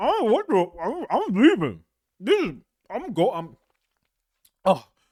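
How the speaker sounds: talking with mouth full. Acting out a fry-theft questioning, a guy caught mid-mouthful protests: talking with mouth full of fries. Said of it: "some guy with a mouthful of fries like".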